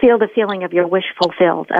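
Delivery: ordinary talk, nothing marked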